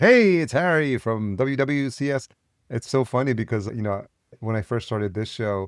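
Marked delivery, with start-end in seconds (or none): 0.0-2.3 very slow, drawn-out eighties radio announcer voice. Recalling eighties radio and the way DJs spoke, in a radio DJ voice. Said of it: "even the way people speak".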